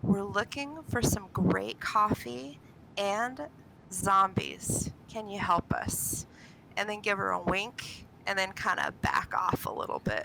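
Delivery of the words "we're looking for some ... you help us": stage whisper, leaning in. In a game scene, the player's character leans up to a smaller woman: stage whisper. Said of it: "act as if I'm whispering".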